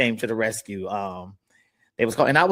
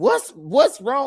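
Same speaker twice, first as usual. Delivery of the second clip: high, frightened, jolted startled scream; 12 semitones higher than usual. Retelling waking as friends broke in for a wellness check: retelling own startled scream. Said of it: "I'm screaming like".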